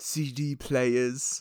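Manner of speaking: plain English accent, put on deliberately. Quoting a line they keep using: put-on English accent. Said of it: "that's a little bit better of an English accent".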